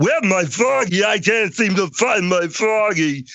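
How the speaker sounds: very high, slow, dim-witted, dopey drawl. Recalling trying out a voice while a director listened, stupid voice. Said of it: "talking in kind of a stupid voice like this".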